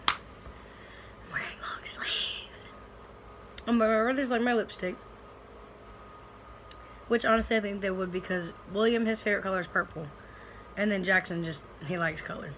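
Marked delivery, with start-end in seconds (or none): 0.1-2.7 slow whisper. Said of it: "I'm like".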